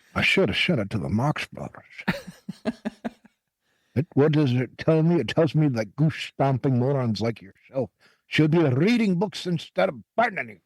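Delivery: put-on Scottish film-star voice. Showing an impression after saying it needs practice: Sean Connery impression. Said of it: "very good Sean Connery".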